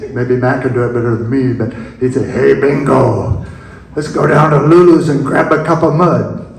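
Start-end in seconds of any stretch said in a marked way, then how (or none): 2.3-6.4 rough gruff tone. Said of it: "in his Velzy gruff voice".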